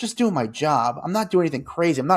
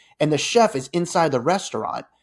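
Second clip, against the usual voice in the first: usual speaking voice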